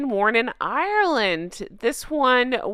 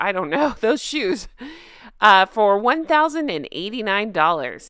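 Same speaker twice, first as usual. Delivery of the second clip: ordinary talk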